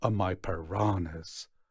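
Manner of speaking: plain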